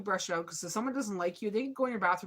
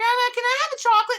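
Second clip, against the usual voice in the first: put-on squealing small child voice, very high and loud; 10 dB louder than usual. Speaker acts out little kids visiting their grandma, in a little kid voice. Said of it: "the little kids come over like".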